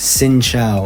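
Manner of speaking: normal talking voice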